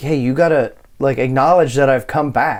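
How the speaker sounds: ordinary delivery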